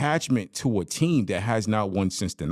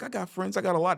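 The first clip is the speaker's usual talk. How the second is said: put-on high, childlike little toddler voice; 10 semitones higher, 4 dB quieter than usual. Comparing how someone looked to a toddler asked about friends, imitating a toddler. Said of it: "have you ever asked a toddler if they got friends".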